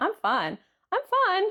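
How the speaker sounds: very high, rising, forced reassuring tone. Retelling talks with a workmate at work: imitating own voice rising higher. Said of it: "my voice will get higher and higher".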